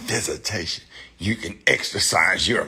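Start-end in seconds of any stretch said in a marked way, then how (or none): 0.0-0.8 airy, breathy whisper full of pride. Mimicking how judges in court say the word visitation, mock-proud. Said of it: "they be saying it with pride".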